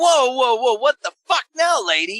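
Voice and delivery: very high, shrill, shrieking outburst. Retelling an argument with a doctor: imitating screaming in an argument. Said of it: "So now we're screaming at each other".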